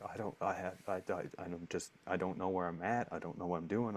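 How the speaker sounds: put-on sobbing, crying voice. Retelling waking up in the bathtub and starting to cry: retelling own crying words. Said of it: "I just start crying".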